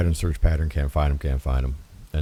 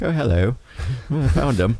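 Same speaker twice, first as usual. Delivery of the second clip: startled, high, put-on British accent; 8 semitones higher than usual. Retelling finding him over an open radio line, in a British accent. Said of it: "if I'm startled, I get a British accent".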